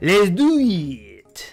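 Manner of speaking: put-on, fake French accent. Playing a game and trying to be a Frenchman, the speaker uses a put-on French accent. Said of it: "that French accent I just did".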